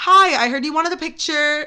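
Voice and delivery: ordinary talk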